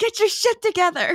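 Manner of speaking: mock high yelling. Retelling a tennis scene from a movie: imitating Kristen Wiig yelling. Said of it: "Kristen Wiig's just yelling at the woman".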